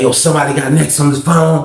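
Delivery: put-on American West Coast accent. Retelling what a stranger said: imitating a West Coast accent. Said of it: "He sounded like somewhere on the West Coast".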